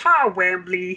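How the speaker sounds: high-pitched, loud character voice. Demonstrating the line he usually says, in a Boober voice. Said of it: "That was my Boober".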